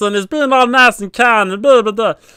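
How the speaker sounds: little high character voice. A DM showing how one of his characters sounds, little meatball character voice. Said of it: "he sounds like this".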